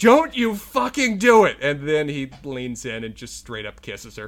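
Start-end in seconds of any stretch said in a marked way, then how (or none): 0.0-1.6 panicked, high-pitched, very loud scream. Recalling watching a TV scene unfold, retelling screaming at the TV. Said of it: "I'm screaming at the TV".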